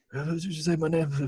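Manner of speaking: faint, high, barely voiced half-whisper. Reviewing a movie, quoting how he barely half-whispered early on, in a half-whisper. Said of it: "him whispering and him yelling".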